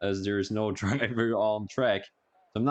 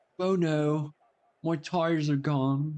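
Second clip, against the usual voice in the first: fake posh English accent, pitched much higher; 6 semitones higher than usual. Speaking to [name], the speaker attempts a put-on posh English accent. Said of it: "say it with a posh English accent".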